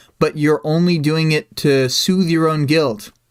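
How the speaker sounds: plain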